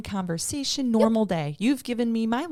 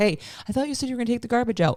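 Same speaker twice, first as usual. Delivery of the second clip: mock, mild half-yell; 3 semitones higher than usual. Retelling a moment at home with a sixteen-year-old: imitating own yelling. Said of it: "when I'm yelling at my sixteen-year-old".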